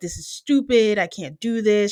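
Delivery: mock crying, put-on tearful voice. Retelling what a woman said while she was crying, imitating someone crying. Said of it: "She's crying".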